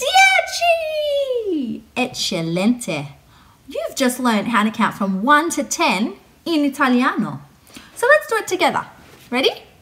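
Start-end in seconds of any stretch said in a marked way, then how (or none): 0.0-1.8 very high, loud, long, drawn-out shout. Leading a class in counting aloud in Italian: big loud voice. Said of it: "Can we say it in our big loud voices?".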